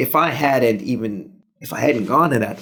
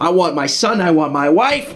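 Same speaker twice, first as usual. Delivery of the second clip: dramatic, forceful movie-hero voice; 6 semitones higher, 4 dB louder than usual. Showing the Denzel impersonation planned for an audition: Denzel Washington impression. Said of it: "Just do a Denzel impersonation".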